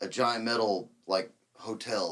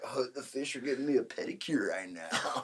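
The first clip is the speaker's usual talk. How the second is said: put-on tipsy, giggly speech, quieter; 8 dB quieter than usual. Retelling how a drunk dad talked in the lake: imitating drunk giggling talk. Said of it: "be giggling, like".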